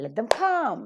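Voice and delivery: "let" and "them" weak, "come" stressed. Example where let and them are weak forms: stress on come. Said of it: "only one word is accented, come".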